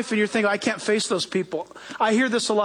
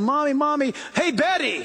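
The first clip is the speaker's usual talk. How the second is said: put-on nagging, pestering child voice; 4 semitones higher than usual. Describing the constant pulling on moms: imitating a child calling mom. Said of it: "kids today go".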